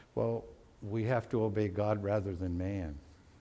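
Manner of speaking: very calm, low, soft, steady voice. Retelling a man's answer to the waiting high priest, very calm voice. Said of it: "in a very calm voice".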